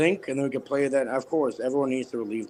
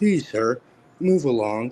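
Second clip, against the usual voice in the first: gentle, courteous, nice, kind, polite voice. Rephrasing a rude line after apologizing for the language: nice, kind voice. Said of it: "say it in a nice, kind voice".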